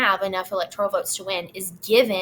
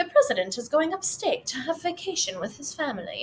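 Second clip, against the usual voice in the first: put-on British accent, announcer style, pitched up; 6 semitones higher, 4 dB quieter than usual. Reading out a published notice about the president in a British accent.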